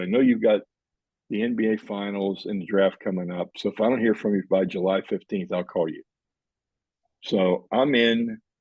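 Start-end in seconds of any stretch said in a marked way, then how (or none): none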